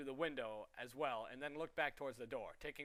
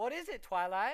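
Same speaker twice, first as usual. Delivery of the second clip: put-on small, young, high-pitched filly voice, loud; 8 semitones higher, 7 dB louder than usual. Narrator reads a filly asking Twilight a question, in a high-pitched filly voice. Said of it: "said a high-pitched filly voice".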